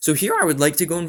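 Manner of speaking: voice cracking up high mid-sentence. Explaining his deck strategy mid-match, the speaker's voice cracks. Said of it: "voice crack".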